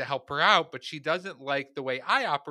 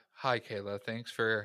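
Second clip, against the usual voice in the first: put-on public radio voice, quieter; 4 semitones lower, 7 dB quieter than usual. Greeting Kayla before sharing a worry, in an NPR voice. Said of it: "NPR to me voice".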